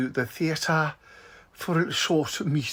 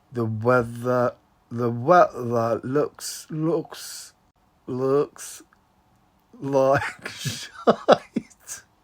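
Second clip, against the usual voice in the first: slow, low, drawled southern accent, stumbling; 4 semitones lower than usual. After googling how to do the accent, trying a slow southern accent. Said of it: "they say talk slowly".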